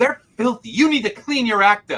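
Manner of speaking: put-on high, furious, acted-out old-lady scolding. Retelling an old lady scolding the writer of a book: imitating an angry old lady. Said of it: "she was very angry at me".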